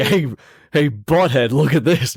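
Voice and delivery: tough-guy schoolyard bully voice, like a movie bully. Joking about an imagined deleted movie scene, Biff voice. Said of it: "Where he's like".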